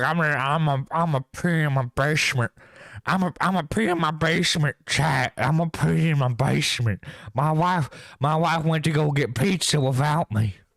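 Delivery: mocking put-on drunken voice. Mocking someone for peeing in their basement: mocking drunken voice. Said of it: "You're just drunkenly, willingly just going like".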